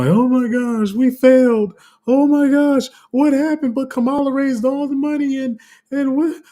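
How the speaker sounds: very high, slow, tearful crying. Predicting how people will react in November, acting them out: imitating people crying. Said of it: "You're going to have a bunch of people crying".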